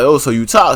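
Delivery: normal talking voice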